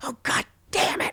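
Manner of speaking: high, breathy, frustrated mutter under the breath.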